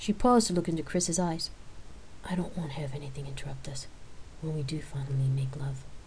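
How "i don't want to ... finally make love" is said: low, hushed whisper under the breath. A woman declining an evening out speaks to the man she is with, whispered. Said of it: "at her whispered words".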